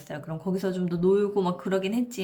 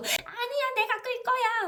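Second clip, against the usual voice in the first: put-on high-pitched, very high toddler voice, protesting. Retelling how a child answered when told to sit, imitating a child protesting. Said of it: "막 이러고".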